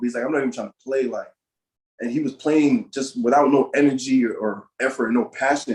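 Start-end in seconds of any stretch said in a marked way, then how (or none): 0.2-1.0 acted-out, angry, fed-up tone. Retelling a teammate refusing to play at a tournament: imitating a mad teammate. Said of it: "E-Man was mad about something".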